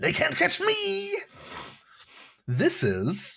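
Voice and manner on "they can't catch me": unhinged dwarf voice, higher. Voicing a crazy dwarf who escapes the orcs: crazy dwarf voice. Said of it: "Thisvin Talus is crazy".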